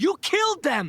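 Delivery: very high, shrill, furious angry yelling. In a drama scene, one character confronts another who beat the bad guys, yelling angrily. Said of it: "Stop yelling at me".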